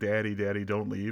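plain

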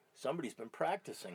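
soft, completely serious, dead-serious delivery. Speaker retells what a guy said to him between songs, dead serious. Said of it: "fucking looks at me dead serious".

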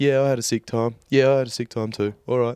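usual speaking voice

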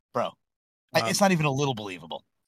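ordinary delivery

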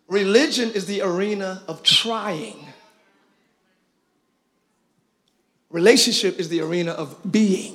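slightly slowed, measured, deliberate delivery. Repeating a statement to the audience, a little slower. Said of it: "I'm going to say it again a little slower".

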